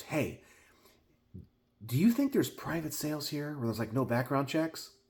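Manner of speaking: hushed, secretive stage whisper under the breath. Retelling what a guy walking in asked a friend: imitating a half-whisper. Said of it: "he kinda whispers to him and goes".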